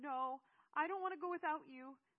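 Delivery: screamed, very high and very loud. Narrator reads Seth refusing to leave without the narrator, screaming. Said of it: "Seth screamed".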